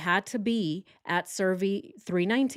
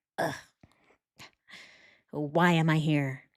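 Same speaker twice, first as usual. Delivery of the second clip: mock delivery dripping with contempt and resentment; 3 semitones lower than usual. Retelling how Chris showed up to the police, imitating Chris's resentful disdain. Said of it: "with such resentment and disdain".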